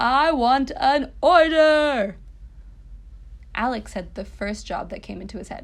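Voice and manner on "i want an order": very loud, very slow, high-pitched bellowing yell. A mischievous goblin yells at the boy who summoned him, yelling. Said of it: "was now yelling".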